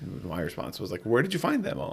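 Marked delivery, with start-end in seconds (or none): 1.0-1.9 put-on playfully sarcastic, silly, pitched-up tone. Retelling a reply to a dad in a dads group: retelling a sarcastic, silly reply. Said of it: "just be sarcastic, but silly about it".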